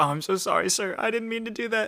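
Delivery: high, very high, blubbering fake sobbing. Imagining a server apologizing after a bad rating: mock crying. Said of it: "the person starts crying and says".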